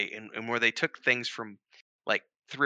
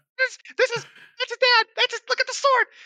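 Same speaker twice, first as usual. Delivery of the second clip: put-on excited shouting, higher and louder; 8 dB louder than usual. Retelling watching the reveal scene, imitating own excited outburst. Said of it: "I was like a kid on crack candy".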